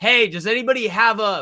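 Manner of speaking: high, drawn-out, hollering scream. Retelling a friend asking for a cigarette at a soccer game: imitating a friend screaming. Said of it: "screaming to everybody".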